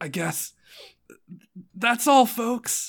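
breathless, out-of-breath villain voice. Voicing a villain who laughs weakly at a failing hero: breathless villain voice. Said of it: "she doesn't have very much breath".

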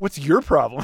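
put-on childish teasing tone. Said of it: "you used to do that same crap".

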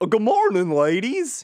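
very high-pitched, loud cartoon voice. Retelling a cartoon scene to another speaker: Goofy voice. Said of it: "you have the intonation down perfectly".

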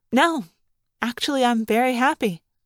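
ordinary delivery, nothing marked

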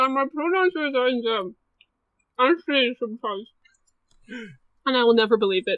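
speaking through a mouthful of noodles. Introducing herself to the group while eating noodles, talking with mouth full. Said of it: "I've got a mouthful of noodles".

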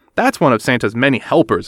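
plain

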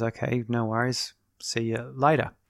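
normal talking voice

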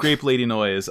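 normal talking voice

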